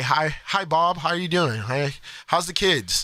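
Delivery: polished, polite, cordial, proper professional voice. Showing how one code switches at work: imitating own proper work voice. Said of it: "I say".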